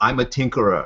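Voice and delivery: put-on cliché German accent. Describing a video's stereotypical scientist, the speaker does a german scientist accent. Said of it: "He's got a German accent. He's like".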